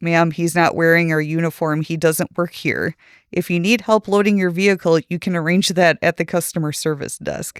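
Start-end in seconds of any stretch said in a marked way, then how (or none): none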